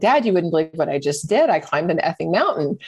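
usual speaking voice

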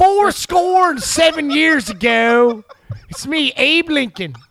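put-on loud, high, belted Baltimore accent. Doing a joke impression, same Baltimore accent: Abraham Lincoln impression in Baltimore accent. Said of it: "Tony's Abraham Lincoln sounds very similar".

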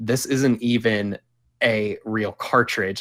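ordinary delivery

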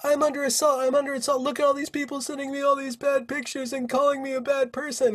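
put-on shrieking, very high-pitched and shrill. Mocking a woman who gets a lot of online hate, mock screaming. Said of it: "and then she starts screaming".

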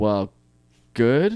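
curt, snippy, backhanded, passive-aggressive tone. Answering a request to say something passive-aggressive: passive-aggressive. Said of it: "now you gotta say something passive-aggressive".

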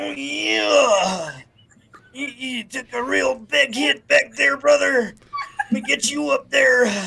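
loud, high-pitched, drawn-out yeah. Imagining a wrestler taking you to heaven after a crash: Macho Man Randy Savage voice. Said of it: "Could you imagine it's Macho Man Randy Savage?".

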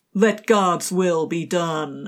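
put-on slow, drawled, terrible American accent. Recapping a Xena scene, the speaker quotes Mael letting go of the rope: terrible American accent. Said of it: "Terrible American accents".

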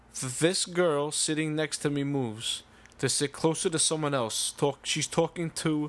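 ordinary talk, nothing marked

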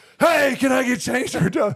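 loud, very high-pitched call. Retelling asking a hard-of-hearing old man for change, retelling a yell. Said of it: "you have to speak up because he's really hard of hearing".

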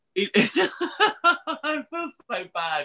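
giggling while talking, high and slow.

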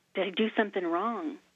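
normal talking voice

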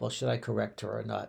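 normal talking voice

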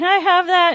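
very high, loud shouted voice. Retelling a concert where someone in the crowd called out: imitating someone yelling. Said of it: "somebody's yelling".

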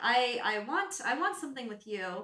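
plain

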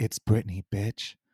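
spooky, eerie, disembodied ghost voice. Imagining the ghost as Britney speaking, in a disembodied Britney ghost voice. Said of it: "this disembodied voice going".

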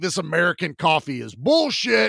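put-on screaming voice. Retelling a scene with an unhinged scientist, imitating someone screaming. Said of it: "He screams, he's like".

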